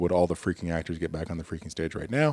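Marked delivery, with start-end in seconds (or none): none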